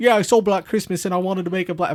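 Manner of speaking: put-on Australian accent slipping into British. Quoting a director's interview about wanting to copy a film: Craig Anderson Australian accent. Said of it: "my Australian sounds like a British person".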